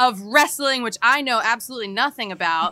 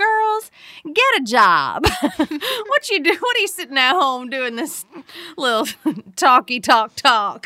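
put-on country voice, pitched higher; 4 semitones higher than usual. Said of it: "It's kind of country".

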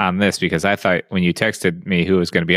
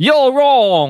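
put-on, very high, loud Cockney accent; 6 dB louder than usual. Podcast host opens the show in a put-on accent, Cockney-like accent. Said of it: "Is that like Cockney or something?".

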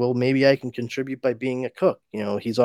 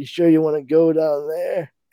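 worried, high, little whimper; 5 semitones higher than usual. Retelling a comic scene as Metamorpho leaves: Plastic Man whimpering. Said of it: "Plastic Man kind of whimpers out".

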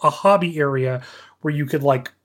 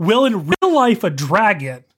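heated shout at the top of the lungs; 4 semitones higher, 3 dB louder than usual. Retelling what someone yelled in the middle of a heated argument, imitating someone shouting. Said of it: "shouting at the top of his voice".

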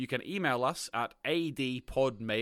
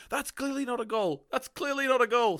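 very high, shrill, acted-out screaming; 12 semitones higher, 5 dB louder than usual. Retelling a YouTuber watching a goal replay: imitating someone screaming. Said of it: "he was screaming at the screen going".

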